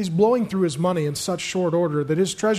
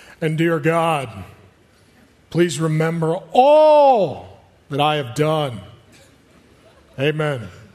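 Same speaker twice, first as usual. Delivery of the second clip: loud pulpit preaching tone, words drawn out; 5 dB louder than usual. Reading a prayer aloud to the audience, in a preacher voice. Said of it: "Use my preacher voice".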